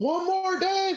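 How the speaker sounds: very high, shouted, yelled call-out. Retelling yelling out from the back during a joke-teller's set: retelling a yell. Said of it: "And I just yell out".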